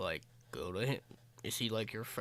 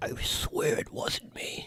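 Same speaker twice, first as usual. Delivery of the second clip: very slow, loud stage whisper; 3 semitones higher, 6 dB louder than usual. Whispering down to Benzio in character over the bodies: whispering in character. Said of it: "I kinda whisper down to Benzio".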